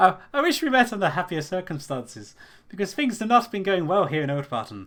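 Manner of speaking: bad put-on Irish accent, high and loud. Voicing a character who greets another character: horrible Irish accent. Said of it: "You have a horrible Irish accent".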